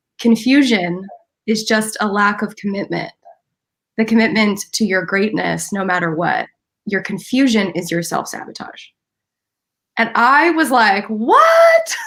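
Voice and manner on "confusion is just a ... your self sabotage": very calm, steady, composed, measured. Retelling a man's reply to the speaker's excuses, imitating a calm delivery. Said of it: "he just very calmly said".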